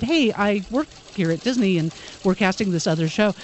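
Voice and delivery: ordinary talk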